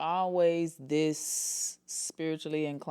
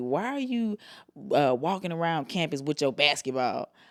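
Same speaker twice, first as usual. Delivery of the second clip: scornful, needling, sarcastic and mocking tone; 3 dB quieter than usual. Retelling what a coach at TSU said to the speaker, mock-sarcastic coach quote. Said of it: "and saying this sarcastically".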